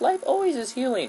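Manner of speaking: very high, mocking gush.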